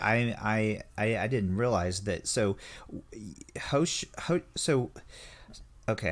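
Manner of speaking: slow stammering. Realizing a misunderstanding mid-conversation and apologizing, stuttering. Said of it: "I'm stuttering here".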